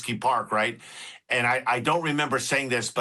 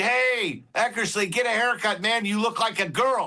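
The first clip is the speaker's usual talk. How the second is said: high, taunting heckling scream; 10 semitones higher than usual. Retelling how the speaker screamed at an outfielder from the bleachers, reenacting the scream. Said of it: "I screamed".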